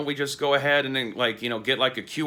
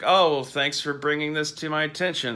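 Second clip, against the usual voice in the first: sarcastic, much higher; 3 semitones higher than usual. Giving an example of a sarcastic remark while talking about videos, sarcastic remark. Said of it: "rephrase a sarcastic".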